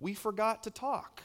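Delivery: put-on soft, high small child's voice. Father retells what his young son said from his bed, imitating a little voice. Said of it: "I hear this little voice go".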